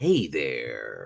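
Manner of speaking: very low deep voice, there stretched out. Doing a best impersonation of a chat viewer: Tug impersonation. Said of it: "Let me do my best Tug impersonation".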